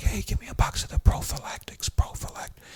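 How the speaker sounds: discreet, hushed, breathy whisper, barely voiced. Retelling asking a store clerk for condoms with big words: imitating own past whisper. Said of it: "I was trying to whisper".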